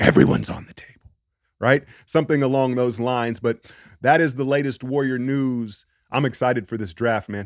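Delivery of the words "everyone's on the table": rough, creaky, raspy put-on voice. Imitating a team owner declaring everything open: Vince McMahon voice. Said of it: "Gets in his Vince McMahon voice".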